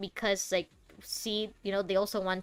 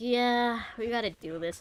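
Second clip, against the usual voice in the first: playing up a bummed-out, dejected voice; 3 semitones higher than usual. Reacting to a character who just spoke, imitating a bummed-out voice. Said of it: "He sounded so bummed out".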